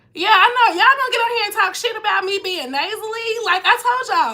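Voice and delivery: playful, high, loud mock-indignant scolding tone.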